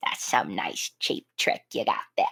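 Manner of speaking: breathy, half-whispered delivery breathed out. Praising an actor's film role, then quoting him: Willem Dafoe impression. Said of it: "That was a great impression".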